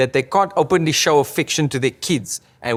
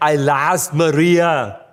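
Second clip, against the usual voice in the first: acted tearful, weeping, sobbing crying voice. Wondering how Arnie cries, the speaker acts it out in a mock Arnie crying voice. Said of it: "[ makes Arnie crying sound ]".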